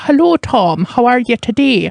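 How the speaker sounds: terrible fake Irish accent. Mimic the Irish accents in a film while greeting Tom, in a mock Irish accent. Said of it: "Tom Cruise and Nicole Kidman do Irish accents".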